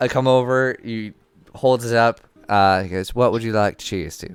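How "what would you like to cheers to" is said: sudden put-on British accent. Voicing the uncle offering a toast: British accent. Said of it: "Did you just turn British?".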